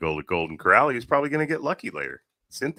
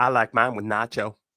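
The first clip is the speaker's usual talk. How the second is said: put-on genteel, refined Southern lady accent. Joking about a nacho cheese fountain: put-on refined southern lady voice.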